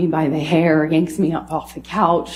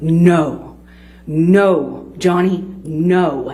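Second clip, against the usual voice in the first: very slow, calm, controlled, steady, drawn-out delivery. Speaker retells a woman stepping between them, imitating her slow, calm repeat. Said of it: "she just repeated herself very slowly, very calmly".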